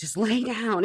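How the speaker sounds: alarmed, urgent, panicked yell. Retelling what he shouted at the speaker in bed, retelling panicked yelling. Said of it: "He's like yelling at me".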